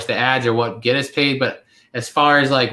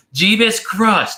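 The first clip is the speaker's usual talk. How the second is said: high, snarky, sarcastic, mocking yell; 8 semitones higher, 3 dB louder than usual. Retelling answering a grandmother's scolding: imitating own yell. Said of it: "I just yelled".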